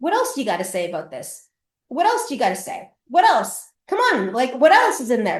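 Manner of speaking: acted-out taunting, goading, provoking tone. Retelling how she goaded the yelling man: provoking, goading tone. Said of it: "shit disturber [name]".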